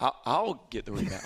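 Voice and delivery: put-on plain, matter-of-fact, self-evident tone. Retelling a player's reply to a question: imitating an answer as if the question were dumb. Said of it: ""Are you dumb?"".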